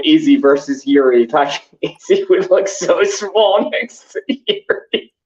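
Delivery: speech bubbling with laughter throughout. Picturing Izzy next to Yuri while discussing fighters, laughing while talking. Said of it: "I'm just still laughing".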